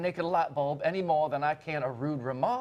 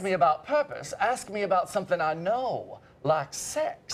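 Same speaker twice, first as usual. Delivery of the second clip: put-on American Southern accent. Asked to say the quoted line again: southern voice. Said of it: "in your southern voice".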